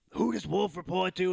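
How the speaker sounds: rough, scratchy, creaky rasp. Retelling a question asked on a show: imitating Pat McAfee's raspy voice. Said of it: "in his raspy-ass voice".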